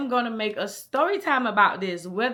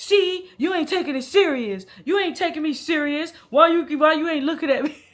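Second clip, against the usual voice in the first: loud, accusing, repeated complaining; 4 semitones higher, 5 dB louder than usual. Retelling what the man in the car kept saying: imitating the man complaining. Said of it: "he was just like".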